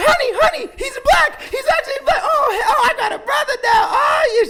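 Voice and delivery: over-the-moon excitement, very high, shrill and very loud. Retelling a caller's reaction on the phone, imitating someone hyped. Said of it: "She was so hyped".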